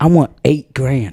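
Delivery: mock serious angry tone. Retelling a video where a kid demands money: imitating a serious angry demand. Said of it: "he got so serious and angry looking".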